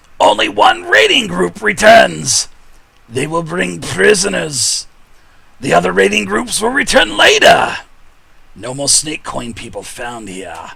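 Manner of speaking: loud, high, swooping goblin voice, broken speech. Narrating a story scene, give the goblin's line in a goblin voice. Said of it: "The goblin says".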